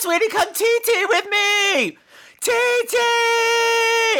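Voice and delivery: put-on motherly call, very high, very slow, drawn out. Retelling a mother calling her teenage daughter, imitating her yell. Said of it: "by yelling this".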